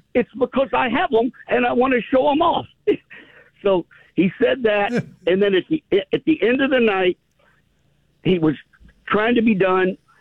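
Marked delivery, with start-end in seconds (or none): 0.2-2.7 lightly laid-on, put-on Southern accent, pitched up. Retelling what a musician said onstage, in a somewhat southern accent. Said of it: "imitate this with my somewhat Southern accent".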